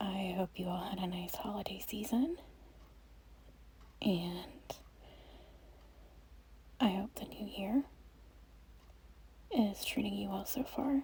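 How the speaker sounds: soft, gentle voice. Greeting viewers in a first channel voiceover, in a soft tone voice. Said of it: "I'm trying to speak in a soft tone voice".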